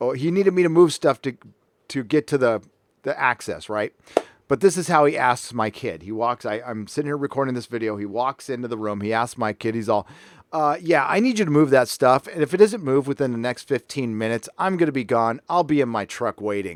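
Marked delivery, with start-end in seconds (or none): none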